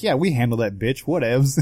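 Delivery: plain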